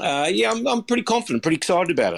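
high, energetic, upbeat, excited lift in voice. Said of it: "I can hear the energy in your voice".

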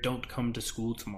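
hushed, secretive voice.

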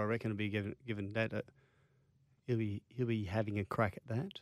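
very soft, quiet near-whisper. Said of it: "Why are you whispering?".

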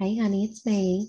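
whispered line. Using a message spell, the player speaks secretly to a fellow character, whispering. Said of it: "I'm going to whisper to him".

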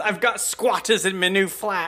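high, flustered, put-upon fussing. Redoing the Mrs. Slocum line the way she does it. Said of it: "the way she does".

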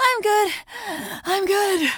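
out of breath, winded, panting, pitched high. In a YMCA ad, after taking off winter layers, out of breath. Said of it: "once you catch your breath".

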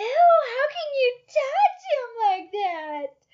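very shrill, piercing, very high, loud squeal. Retelling a story, the speaker quotes Shirley reacting to someone holding a pet mouse, imitating Shirley shrieking. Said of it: "Shirley's shrieking".

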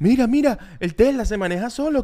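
put-on childish yelling. Retelling Shakti shouting and pointing at a Tesla: imitating Shakti shouting like a child. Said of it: "Shakti gritando en el parking".

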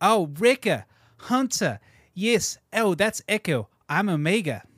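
put-on New Zealand accent. Speaker impersonates a character from the Bad Batch: Omega impression, New Zealand accent. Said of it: "I can get my New Zealand accent when I impersonate".

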